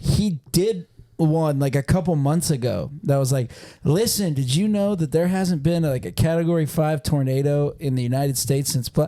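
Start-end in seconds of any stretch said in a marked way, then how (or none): none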